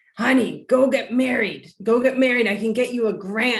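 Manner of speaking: small raspy woman's voice. Telling the story of getting married, quoting what she used to say: Maria Gillen's little raspy voice. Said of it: "in her little raspy voice".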